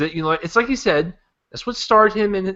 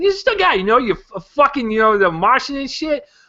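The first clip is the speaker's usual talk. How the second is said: put-on Boston accent, pitched up; 6 semitones higher, 3 dB louder than usual. Praising The Martian on a movie list, put-on Boston accent. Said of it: "now my Boston accent's coming out".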